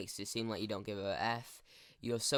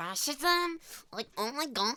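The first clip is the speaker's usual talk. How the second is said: mocking, mimicking voice, higher and louder; 5 dB louder than usual. Mocking how socialists and communists talk in discussions: mocking imitation of socialists' way of talking. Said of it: "where they're talking like this".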